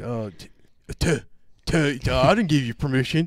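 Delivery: loud yelling, tripping over a repeated t sound. Telling a story, the speaker quotes a woman objecting, imitating someone yelling. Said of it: "So she's yelling like".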